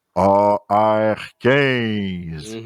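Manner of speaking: big, deep, spooky put-on scary voice. Speaker repeats a code for the audience in a big voice. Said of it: "on va le dire avec euh, une grosse voix".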